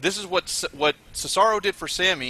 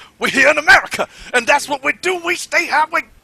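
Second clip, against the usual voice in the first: very high, loud, pumped hype promo voice; 13 semitones higher, 8 dB louder than usual. Acting out how he showed what get hype and stay hype means, John Cena football-style promo voice. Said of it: "the apex of a football speech".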